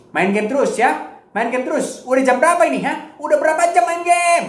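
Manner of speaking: aggressive high scolding.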